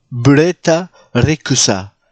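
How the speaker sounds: put-on the name pronounced with a Japanese accent. Telling how a woman's name was apparently said: japanese accent on the name. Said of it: "son nom se disait avec un accent japonais".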